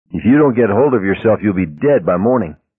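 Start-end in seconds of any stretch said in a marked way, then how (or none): none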